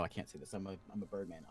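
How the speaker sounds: normal talking voice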